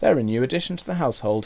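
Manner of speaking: plain reading voice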